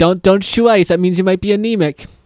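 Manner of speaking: high, yelled scolding. Retelling what the hygienist told a patient chewing ice: imitating someone yelling. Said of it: "And the lady yelled at him".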